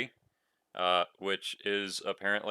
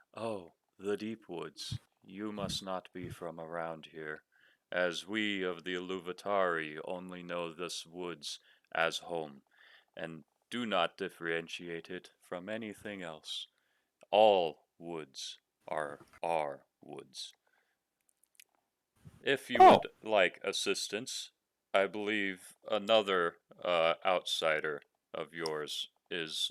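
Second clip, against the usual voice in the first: very soft, hushed delivery; 3 semitones lower than usual. One of the Iluvatari answering lost travelers, in a very soft voice. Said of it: "he says in a very soft voice".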